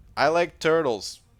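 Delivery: put-on high, childlike voice of a young kid. Asking a question from the speaker's brother, doing the 'I like turtles' kid impression. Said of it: "That was my best impression of the I like turtles kid".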